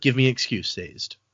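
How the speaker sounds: ordinary talk, nothing marked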